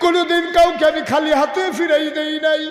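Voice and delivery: tearful wailing, rising into a high, loud wail.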